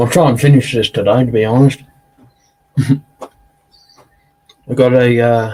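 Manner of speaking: speaking while eating, mouth full. Eating chocolate while chatting, talking with food in mouth. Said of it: "don't like talking with food in my mouth".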